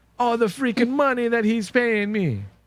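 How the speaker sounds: bad fake Jamaican accent. Quoting DJ's line back to the others: DJ's bad wannabe Jamaican accent. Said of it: "With that bad wannabe Jamaican accent that DJ had".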